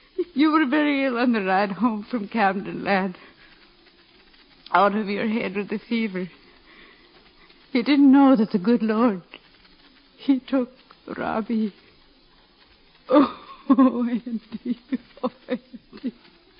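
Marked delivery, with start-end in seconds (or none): 7.7-16.1 crying, tearful. Telling her son that robbie has died, crying. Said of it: "Don't cry, Ma".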